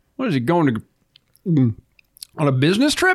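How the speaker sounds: talking while swallowing a mouthful of food. Asking the others a question, swallowing food while talking. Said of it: "Thanks for swallowing your meatloaf while you talk".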